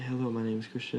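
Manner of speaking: hushed whisper. Demonstrating how a phone mic would ask for a whisper, whispering. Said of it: "please whisper it for me".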